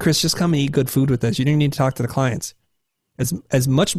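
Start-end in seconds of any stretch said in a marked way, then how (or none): none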